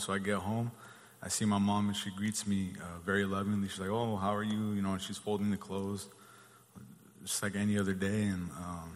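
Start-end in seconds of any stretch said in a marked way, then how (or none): none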